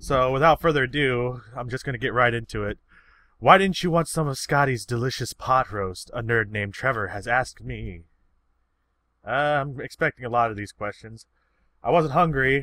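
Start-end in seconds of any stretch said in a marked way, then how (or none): none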